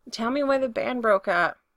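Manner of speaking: plain reading voice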